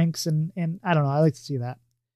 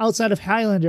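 ordinary talk

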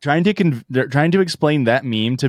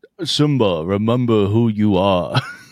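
put-on Brooklyn accent layered over a well-known voice; 3 semitones lower than usual. Quoting a movie line to a friend, as James Earl Jones by way of Brooklyn. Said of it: "James Earl Jones by way of Brooklyn".

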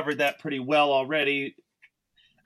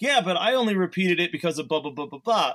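very excited, fast, eager rush of words. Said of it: "very excitedly, I'm like".

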